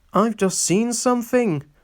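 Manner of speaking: trembling, frightened, shaky, high voice. Toby telling Thomas he has just seen something, in a shaky voice. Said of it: "said Toby in a shaky voice".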